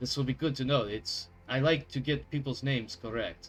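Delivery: strong put-on Russian accent. Speaking in character after learning a name: thick put-on Russian accent. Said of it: "The Russian is coming in thick now".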